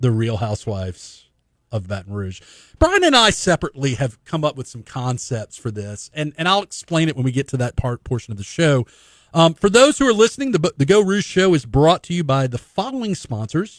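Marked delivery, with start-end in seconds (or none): 0.0-2.4 slow, deliberate, lowered voice, each word drawn out. Show host repeats a segment title for listeners, slower repeat. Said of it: "I'm going to say that again slower".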